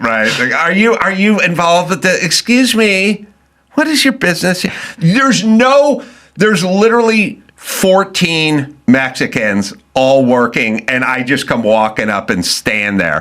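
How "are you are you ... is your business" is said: mock entitled woman voice, higher. Imitating middle-aged women questioning someone at a site: imitating a Minnesotan middle-aged woman. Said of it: "It's never, they know you don't own the home".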